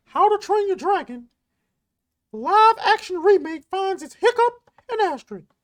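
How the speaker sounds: high, cartoony, squeaking voice. Reading a movie news headline, in a Mickey Mouse voice. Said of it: "we're doing this in the Mickey voice".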